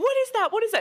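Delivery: shrill, very high screaming shriek. Acting out a woman first seeing a cat in the backyard, retelling a scream. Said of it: "she starts screaming".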